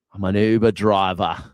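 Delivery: put-on Australian accent. Recounting a chat with an old coworker from Australia, the speaker quotes him: Australian accent. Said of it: "I really turn on the Aussie accent".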